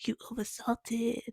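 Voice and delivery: put-on French accent with a scolding, reproachful teacher tone. Retelling what a french teacher said after tasting the dish, imitating a french accent. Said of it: "in a French accent".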